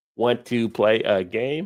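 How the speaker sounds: voice of a talking movie computer. Recalling a Cold War movie, the speaker quotes its line: WarGames computer voice. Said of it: "still know that computer voice".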